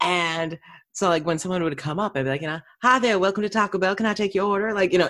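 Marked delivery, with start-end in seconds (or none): 2.8-4.7 put-on southern accent, much higher. Speaker recalls greeting Taco Bell drive-thru customers in a put-on southern accent. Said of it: "no one batted an eye because it was south enough in the Midwest".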